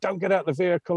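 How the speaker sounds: held-back, contained, restrained shout. Retelling a warning others shouted from the vehicle: imitating others shouting. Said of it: "I could hear J Y and everybody shouting".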